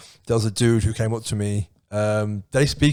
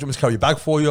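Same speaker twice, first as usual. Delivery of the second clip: put-on male Caribbean accent, higher; 4 semitones higher than usual. Retelling what a man said to the speaker, in a Caribbean accent. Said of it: "which is quite Caribbean".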